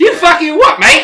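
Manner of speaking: very high, very loud, rude, shrill chicken snarl. Speaker voicing what a chicken is saying, voicing the chicken. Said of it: "So this chicken's like".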